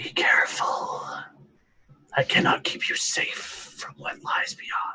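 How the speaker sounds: very quiet, hushed whisper. Narrating the scene, a voice speaks inside Liam's mind: very quiet whisper. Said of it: "very quietly whisper in your mind".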